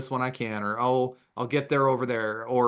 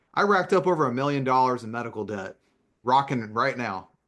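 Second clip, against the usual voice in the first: ordinary delivery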